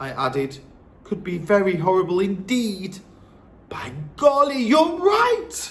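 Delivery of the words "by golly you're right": exclaiming cry, pitched very high. She responds to the narrator's warning, cried out. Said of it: "she cried".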